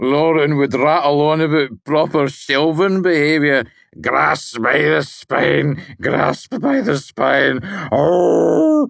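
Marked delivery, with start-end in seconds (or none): 4.0-8.9 slow, rough, gritted grumbling growl, "oh" drawn out. Narrator reading a character's complaint, growling. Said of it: "He growled".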